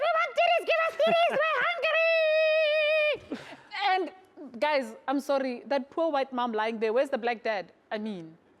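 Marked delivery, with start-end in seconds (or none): 0.0-3.4 very high, squealing piglet voice. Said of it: "they look like they're running around going".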